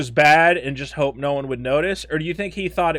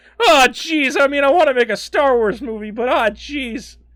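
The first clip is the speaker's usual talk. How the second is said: put-on character voice with raised pitch; 8 semitones higher than usual. Acting out a director's nervous reply in a Morty voice. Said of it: "I love your Morty voice".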